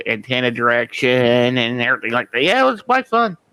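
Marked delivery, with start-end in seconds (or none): 2.6-3.3 sarcastic, pitched very high. Recalling fiddling with TV antennas to get reception: sarcastic tone. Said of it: "I'm saying fun in sarcastic tone".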